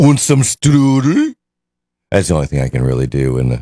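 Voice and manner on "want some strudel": very high-pitched, bad fake Swedish accent. Marking National Apple Strudel Day, offering strudel in a Swedish accent. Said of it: "Swedish accent?".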